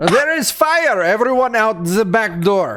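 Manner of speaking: urgent, calling-out voice. Playing a character warning a club crowd to flee: in-character yell. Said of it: "And I wanna yell".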